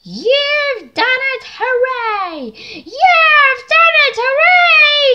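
shrill, very high, very loud cheering hooray. Annie and Clara greet Thomas as they reach the station, cheering. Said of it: "Cheered Annie and Clara".

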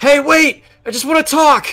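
very high, loud shout. Player in a tabletop game has his character give chase: shouting out. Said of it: "just kind of shout out".

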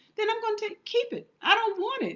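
high, emphatic, indignant voice.

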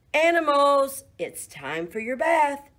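high, ringing call, as if from a distance. Reading someone coming down a snowy path to call the farm animals: calling out. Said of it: "Someone called".

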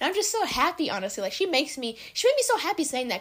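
high, happy voice with audible smile. Reacting to a sweet thing someone said about them, smiling happy voice. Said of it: "you can hear the smiling in my voice right now".

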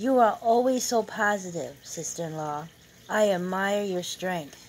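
plain reading voice

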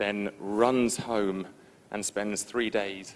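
very slow, drawn-out speech.

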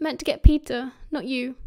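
ordinary delivery, nothing marked

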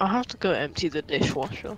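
gloomy, downcast, soft, depressed drooping voice. Asking Tom for help before going off to a chore, said depressedly. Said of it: "You said that like so depressedly".

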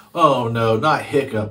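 groaned words. Narrator reading Dog's Breath as the boys hear Hiccup will command; groaning. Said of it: "groaned Dog's Breath".

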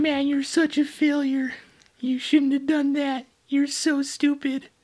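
very high, loud, silly cartoon voice. Retelling how they scolded themselves after messing up at work, in Carl Wheezer voice. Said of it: "in the voice of Carl Weezer from Jimmy Neutron".

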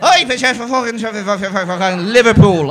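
put-on mumbled Irish accent.

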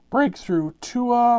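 high voice cracking mid-word. Calling out the cards pulled while opening packs: voice cracking. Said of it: "my voice is cracked".

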